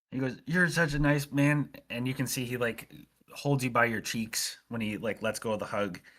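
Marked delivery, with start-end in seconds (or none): 0.4-1.7 choked-up, pitched-up voice, barely holding back sobs. Voicing a character holding in sobs after a gift: NPC holding back sobs. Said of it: "holding in a, like, sobs".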